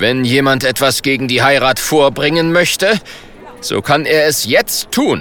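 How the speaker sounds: ordinary delivery, nothing marked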